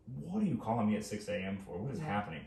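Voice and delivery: ordinary talk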